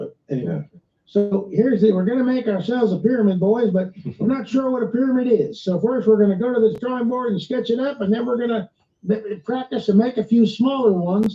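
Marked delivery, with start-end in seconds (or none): 1.9-11.4 put-on solid, convincing, well-done Southern accent. Acting out an imagined group of pyramid builders, in a Southern accent. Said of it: "that was a good accent".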